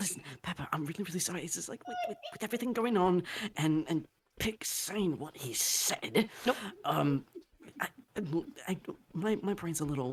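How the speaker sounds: whispering in character. Whispering an apology to Pepper in character: whispering in character. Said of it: "he's gonna whisper".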